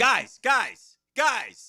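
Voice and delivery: calling out high and loud. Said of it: "his buzzword is".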